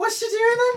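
very high, very loud, shrill Liverpool accent. Asked for an impression of a liverpool accent, the speaker obliges: liverpool accent impression. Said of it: "give us an impression of a person talking in a Liverpool accent".

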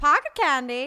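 put-on operetta-style old-film voice. After an ad, a speaker tries talking like an old Hollywood movie. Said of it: "made me want to speak in, like, you know, old Hollywood movie, like operetta".

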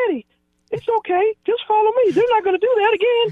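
very high-pitched voice. Retell what the big guy told limping Eddie George in the huddle, in Lorenzo's high voice. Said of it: "but he had a high voice".

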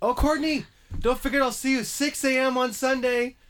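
play-acted, very high-pitched teasing shout. Retelling a joke called to someone leaving the office, retelling a yell down stairs. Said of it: "I yelled down the stairs".

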